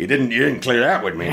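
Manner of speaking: ordinary talk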